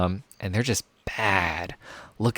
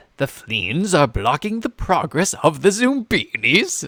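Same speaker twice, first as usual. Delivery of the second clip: loud, pitched-up storybook game narration voice; 8 semitones higher, 6 dB louder than usual. Reading a puzzle game's text aloud, speaker does a Zoombinis narrator impression. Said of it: "I'm doing my best narrator imp- impression right now".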